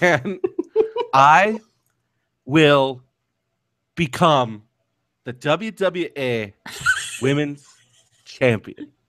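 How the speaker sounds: very slow, drawn out, halting, broken mid-phrase. Speaker demonstrates an impression learned from an episode, talking very slowly. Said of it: "You just talk real slow".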